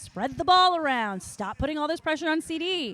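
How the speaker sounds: mock urgent, insistent, half-shouted mild yell. Recalling a clip from a previous episode yelling at Brandon, retelling a yell. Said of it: "I'm like yelling at Brandon".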